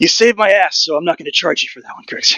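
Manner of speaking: breathing heavily. A game master voices a character right after a teleport escape, breathing heavily. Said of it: "He's breathing heavily".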